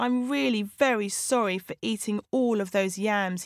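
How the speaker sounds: plain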